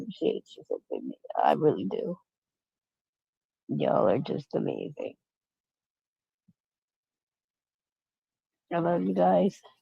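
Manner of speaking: soft, tearful talking, crying through the words. Speaker signing off and thanking listeners, crying while talking. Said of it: "so I don't keep crying in your ear".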